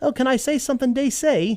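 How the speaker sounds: bad, high, put-on Scottish accent, a failed attempt. Quote a woman answering a comic book movie question at a q and a, in a bad scottish accent. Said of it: "in her wonderful little Scottish accent".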